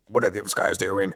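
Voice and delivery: impolite male voice. Retelling what a rude stranger at Starbucks said: imitating the rude man's voice. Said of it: "That's how he sounded".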